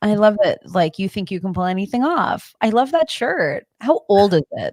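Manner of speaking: manipulative, over-the-top, gushing, fake fawning tone. Imitating a girl's backhanded compliments: imitating manipulative fake compliments. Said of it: "manipulation where it's like".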